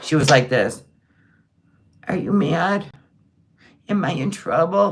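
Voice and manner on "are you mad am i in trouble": put-on mock baby talk voice. Retelling how she talked to him, imitating her baby voice. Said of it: "she's definitely amped up the baby voice".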